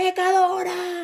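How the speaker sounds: mock very high-pitched scolding, accusing yell. Retelling being yelled at while passing through the plaza: retelling a shouted accusation. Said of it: "me gritaba".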